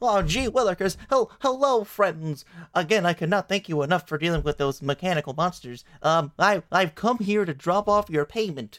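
flustered, nervous, high-pitched, stammering and tripping over words. Voicing the mayor greeting the party: nervous mayor character voice. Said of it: "Mayor Olowitz kind of enters the bar, he greets the party".

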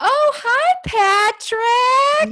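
very high, loud, shrill, blaring voice. Recalling lines of the mother in a movie: Fran Drescher impression. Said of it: "just the way she talks".

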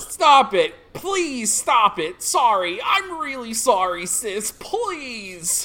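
put-on very loud, whiny boy voice, "please" stretched out. In a roleplay, Sandman begs his sister to stop kicking, whiny Sandman voice. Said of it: "He's just gonna sound like a whiny bitch boy".

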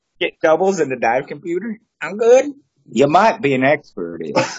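slight put-on Southern accent. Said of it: "I put that Southern accent on".

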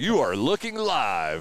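slow, sweeping, drawn-out impression.

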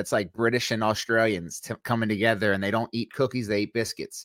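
ordinary talk, nothing marked

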